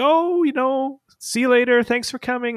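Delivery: very high, loud, bright, upbeat and chipper. Retelling how the coaches say goodbye when the group leaves, mimicking chipper coaches. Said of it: "they're all very chipper and upbeat".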